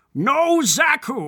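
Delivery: slow, high, boastful put-on villain voice. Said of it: "That's how he says it".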